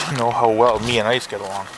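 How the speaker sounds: normal talking voice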